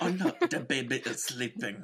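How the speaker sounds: bad, terrible put-on German accent. Acting out an excuse about the baby while retelling a scene with stormtroopers, in a terrible space german accent. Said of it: "our terrible space German accent".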